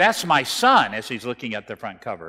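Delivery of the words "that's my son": very loud, high, startled shouting outburst. Retelling a student's reaction to a magazine cover: imitating someone shouting. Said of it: "he started shouting".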